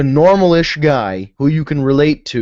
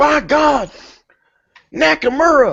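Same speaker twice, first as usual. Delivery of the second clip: put-on Oklahoma commentator accent, higher; 11 semitones higher than usual. Imagining J R commentating New Japan: J R impression, Oklahoma accent. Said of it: "In an Oklahoma accent".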